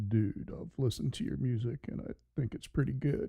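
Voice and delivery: breathy, half-whispered delivery. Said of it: "uh, [name] impersonation".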